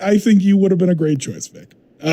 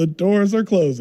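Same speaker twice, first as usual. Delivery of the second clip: normal talking voice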